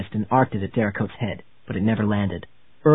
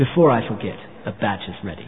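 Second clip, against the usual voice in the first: ordinary delivery, nothing marked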